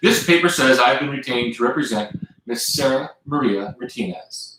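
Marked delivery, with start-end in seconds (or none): none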